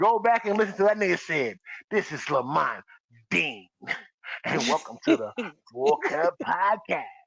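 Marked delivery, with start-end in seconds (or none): 1.9-7.0 adult-film style radio intro voice. Retelling how a podcast co-host opened the show: imitating Lamont Dean's porn voice. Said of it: "that porn voice is crazy".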